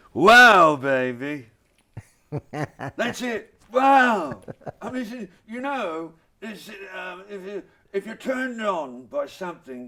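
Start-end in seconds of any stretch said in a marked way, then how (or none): 0.2-4.4 put-on British playboy voice, louder, slower. Asked for an outro on marketing tips, give an Austin Powers impression. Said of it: "Can I get an outro from you with Austin Powers?".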